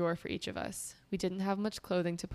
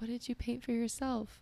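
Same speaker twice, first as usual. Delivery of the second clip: whisper sounding in pain, much higher pitch; 5 semitones higher than usual. Retelling a scene, voicing a man in pain, imitating someone whispering in pain. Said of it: "he's like whispering because he's obviously in pain".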